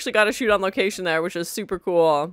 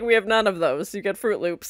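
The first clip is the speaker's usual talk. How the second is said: ordinary delivery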